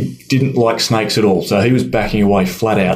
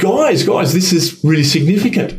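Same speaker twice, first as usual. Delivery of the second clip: put-on light Irish accent, pitched a bit higher; 8 semitones higher than usual. Retelling what Pat said to the group, imitating Pat's Irish accent. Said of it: "in his Irish accent and said".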